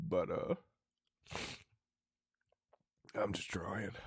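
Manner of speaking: emotional breakdown. Apologizing to online viewers in the middle of a breakdown, emotional breakdown. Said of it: "in the middle of a breakdown".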